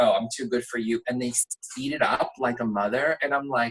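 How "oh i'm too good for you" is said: normal talking voice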